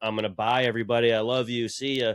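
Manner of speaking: mock solemn, somber, final-sounding tone. Acting out an imagined farewell with thirty days to live: mock somber farewell. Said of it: "I got a somber".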